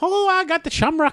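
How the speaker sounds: very high, loud, leprechaun-like stage-Irish accent. Naming the only irish voices they know, the speaker puts on a stereotypical irish accent. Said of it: "The very leprechaun-y".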